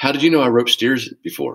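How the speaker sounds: play-acted earnest, completely serious, with rising pitch. Retelling a golf student's reply to a joke: imitating a dead serious question. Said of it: "as dead as she could possibly be serious".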